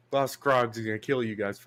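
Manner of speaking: ordinary talk, nothing marked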